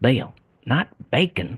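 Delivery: Georgia accent impression. Retelling a man's words to bill, in a georgia accent impression. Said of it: "that's my best Georgia impression".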